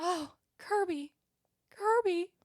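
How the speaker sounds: faint, very high put-on freak-out. Acting out a woman on the phone with the mom, imitating a faint, fake freaking-out voice. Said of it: "like fake freaking out voice".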